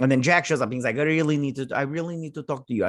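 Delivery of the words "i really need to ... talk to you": put-on quick delivery in a Russian accent. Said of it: "that's a Russian accent".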